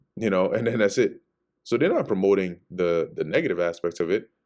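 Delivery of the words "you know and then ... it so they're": ordinary delivery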